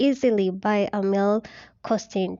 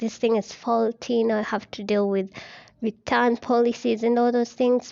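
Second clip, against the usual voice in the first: plain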